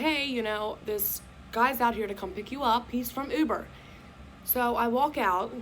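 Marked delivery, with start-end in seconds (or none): none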